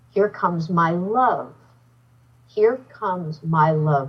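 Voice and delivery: put-on young, earthy, light loving voice with vibration. Retelling how a man he admires spoke to him: imitating a loving voice. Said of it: "there was so much love vibration in his voice".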